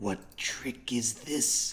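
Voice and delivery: hushed, whispered mutter to himself. Narrator describing Acererak watching the players, Acererak whispering to himself. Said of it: "hear him whisper to himself".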